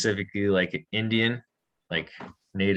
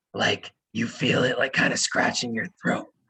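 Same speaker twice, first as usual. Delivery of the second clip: loud, forceful whisper pushed from the throat; 2 semitones higher than usual. Speaker explains the H sound and demonstrates a loud whisper. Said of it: "if you're whispering like this".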